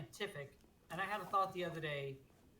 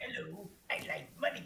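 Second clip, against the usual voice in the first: animated crab voice; 4 dB louder than usual. Joking that a game remake is about money: Mr. Krabs impression. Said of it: "That was a much better Mr. Krabs impersonation".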